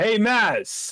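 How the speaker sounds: high, loud shouted call. A character hails someone by name to announce a newcomer: yelling out. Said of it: "He yells out".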